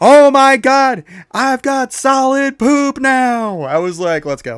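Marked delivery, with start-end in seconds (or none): 0.0-3.6 very high, shrill, drawn-out, thrilled yelling. Speaker retells what she yelled running out of the bathroom, retelling her yelling. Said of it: "And she's yelling".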